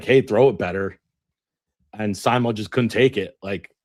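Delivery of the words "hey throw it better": normal talking voice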